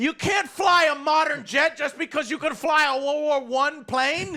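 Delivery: put-on screaming. Retelling watching a movie, yelling at the screen: retelling screaming at the screen. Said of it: "I was screaming at the screen".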